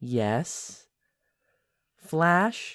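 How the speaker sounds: soft bright voice. Retelling a story, voicing a sloth answering flash, in a soft, bright voice. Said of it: "in a very soft, bright kind of voice".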